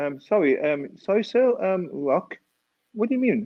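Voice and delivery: put-on British English accent. Retelling answering a man asking for rock, in an english accent. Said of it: "in my English accent now, in my English accent".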